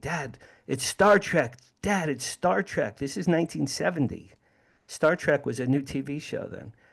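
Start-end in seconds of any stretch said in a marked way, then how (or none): 0.0-3.0 high, excited blurt, mock giddy and eager. Retelling jumping up and down, pointing at the craft: imitating his excited younger self. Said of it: "I'm literally jumping up and down".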